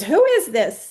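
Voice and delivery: mock just-woken, loud shouting. Retelling being woken by a six a.m. phone call: retelling a scream. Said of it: "picked up the phone and screamed".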